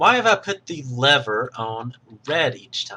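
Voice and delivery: ordinary talk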